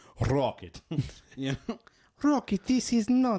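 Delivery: put-on Russian accent. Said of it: "They just made her have a Russian accent".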